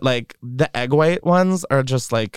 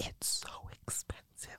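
very quiet, breathy, hushed whisper. Talking about someone they say can hear them, whispering. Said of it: "I'm whispering because she can hear us".

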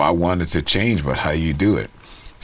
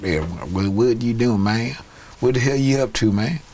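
put-on pitched-up, childlike Southern US accent; 7 semitones higher than usual. Describing how kids from the South talked in California, imitating Southern kids' speech. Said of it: "they spoke like".

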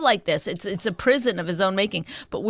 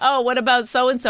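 ordinary talk, nothing marked

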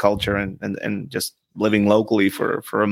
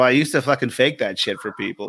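ordinary delivery

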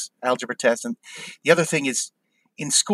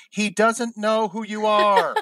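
put-on sassy screamed retort, high and drawn out; 9 semitones higher than usual. Retelling how a friend screamed back at a girl across campus, retelling a scream. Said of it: "he just screams back".

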